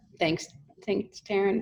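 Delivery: tearful, close to crying. Thanking taryn after a beautiful walkthrough: tearing up. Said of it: "I'm like tearing up".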